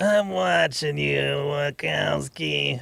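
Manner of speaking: slow, drawn-out, rough, creaky drone. Quoting the slug lady from Monsters, Inc.: slug lady from Monsters, Inc. voice. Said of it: "slug lady from Monsters, Inc".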